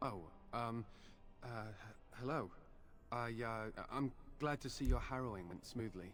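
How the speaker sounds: nervous, hesitant stammer full of uhs. A character greets someone back from a harrowing, nervous stuttering. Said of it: "Why are you stuttering?".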